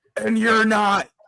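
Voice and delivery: put-on politician-style yelling. Retelling a viral rally clip into a microphone: imitating Phil Murphy yelling. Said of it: "yelled into the microphone".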